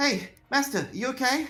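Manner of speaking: very high, slow, drawn-out princess voice. Voicing a princess who checks on her restrained master: princess character voice. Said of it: "The princess, by the sounds of it".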